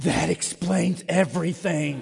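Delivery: low, loud stage whisper. Retelling what a little girl whispered to the speaker, imitating a loud whisper. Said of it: "She whispers very loudly".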